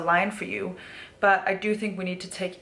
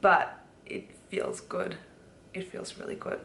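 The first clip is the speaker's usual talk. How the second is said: near-whispered, soft, breathy voice welling with emotion; 5 dB quieter than usual. Speaker reflecting on a change they made, getting emotional. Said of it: "I'm just getting emotional".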